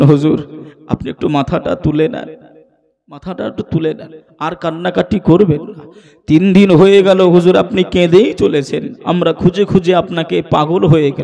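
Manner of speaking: ordinary delivery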